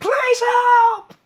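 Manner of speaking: shrieked cry. Voicing a shriek heard as the door closes, a shrieking cry for help. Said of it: "you hear a shriek saying".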